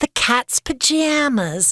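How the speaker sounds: bad New Jersey accent. Discussing Roaring Twenties sayings and how they should sound: bad New Jersey accent. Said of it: "That wasn't a very good New Jersey".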